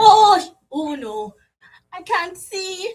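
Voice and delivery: put-on British accent. In an improvised scene, the lights go out; speak in a british accent. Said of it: "you're British".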